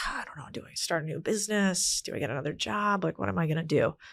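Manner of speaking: mock, fed-up, frustrated, at-a-loss rambling tone. Retelling own past words while fighting with a partner: imitating own frustrated self. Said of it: "and so I was frustrated".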